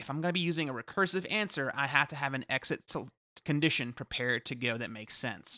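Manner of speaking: ordinary talk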